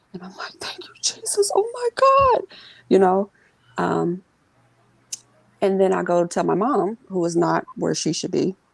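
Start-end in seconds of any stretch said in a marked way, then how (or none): 0.6-2.4 very high, overwhelmed sobbing scream through tears. Recounting a sudden hospital recovery, quoting their own reaction: retelling screaming and crying. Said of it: "I'm like screaming and crying".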